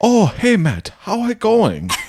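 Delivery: put-on very high, swooping, botched South Dakota accent. Recalling Heather trying to do an accent, imitating Heather's failed South Dakota accent. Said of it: "This is what it sounded".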